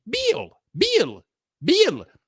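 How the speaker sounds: put-on Mexican accent, high swooping on Bill. Retelling how Mexicans say his name: Mexican accent saying Bill. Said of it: "Mexicans can't say Bill".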